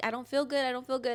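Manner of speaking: put-on crying, tearful and complaining. Retelling telling mom in the car about feeling sick: imitating own past crying. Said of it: "And I'm crying".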